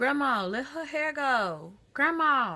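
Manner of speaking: put-on talking like a baby. Retelling a little cousin pleading with grandma: imitating baby talk. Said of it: "she was talking like she was a baby".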